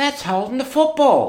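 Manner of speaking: shrill, very high footy-bloke voice. Imitating the one bloke at the back of the crowd: voice of the bloke at the back. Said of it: "he always sounds like that".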